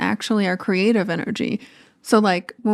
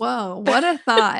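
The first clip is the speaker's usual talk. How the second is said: laughing, heavily sarcastic mock wonder. Answering the other speaker's remark that it could be fun: sarcastic while laughing. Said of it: "I'm laughing and I'm saying it very sarcastically".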